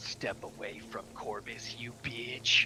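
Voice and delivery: soft, slow, menacing mumble. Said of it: "Dow hears them mumble".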